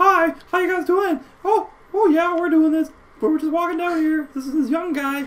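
very high, squeaky, put-on cartoon voice. Showing the others what just a high pitch sounds like, high-pitched put-on voice. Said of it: "What just high pitch?".

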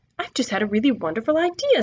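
plain reading voice

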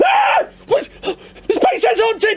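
high, panicked, frightened cry. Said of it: "the shadows and goes".

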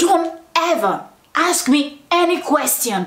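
slow, angry man laying down the law. Retelling what a man said during an interview; imitating an angry man. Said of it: "and he was so angry".

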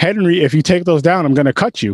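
mock very serious, grave, dead-serious delivery. Quoting what she said to Henry about his collection, mock-serious tone. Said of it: "in a very serious tone".

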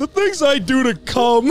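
timid, cowardly cartoon dog voice. Showing what he says to annoy a friend, in a Courage the Cowardly Dog voice. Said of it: "The Courage the Cowardly Dog voice".

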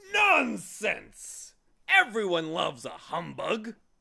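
booming, loud, high-pitched shout. Narrator reading the humbug's retort to the bee, shouting. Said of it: "Shouted the humbug".

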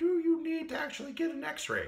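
very high, animated, swooping puppet voice. Making the little dude on screen talk while explaining x-rays, puppet voice. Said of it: "I'm gonna have him talk like a puppet here".

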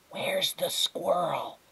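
hushed, high, soft whisper. Tootie steps closer to Flora and asks her, whispering. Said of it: "she whispered".

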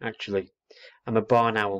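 plain

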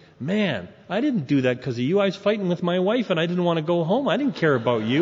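ordinary talk, nothing marked

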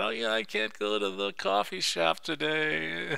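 slow, high-pitched whining, drawn out. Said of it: "I catch myself whining about".

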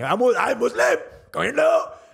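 shrill, raspy, very high, rough shouting. Retelling a heckler at a comedy set: imitating a woman yelling. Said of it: "she's just yelling".

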